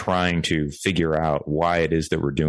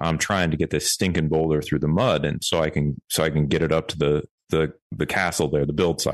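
ordinary talk

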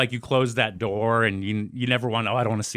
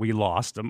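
put-on tearful voice. Retelling what the dad said on first seeing family: retelling dad crying. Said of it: "he crying and says".

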